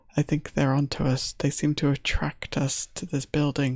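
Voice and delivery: very quiet, hushed voice. A game master voices a character speaking to whoever is close by, very quietly. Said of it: "very quietly says to whoever is close by".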